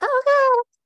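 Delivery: bad, shrill, loud, high-pitched fake panicky voice. Talking about selling art on a possible holiday, terrible mock-panicked voice. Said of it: "That was a terrible voice".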